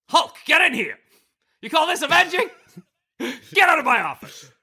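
very high shrill yelling. Speaker imagines J. Jonah Jameson bossing the Hulk: J. Jonah Jameson yelling impression. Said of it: "Jonah Jameson to yell at him".

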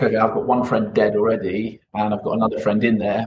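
plain

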